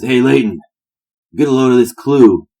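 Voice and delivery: put-on high, loud drunken holler. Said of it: "burps incredibly loudly and says".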